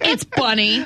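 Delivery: mock angry, fuming kid voice. Retelling what a three-year-old with arms crossed said: imitating an angry child. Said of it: "'cause he's all mad".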